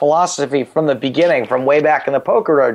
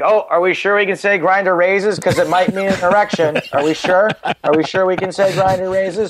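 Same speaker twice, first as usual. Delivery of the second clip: needling, whiny, put-upon, passive-aggressive complaining tone; 4 semitones higher than usual. Retelling own objection when a joke doesn't go through: passive-aggressive complaint. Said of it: "passive aggressive".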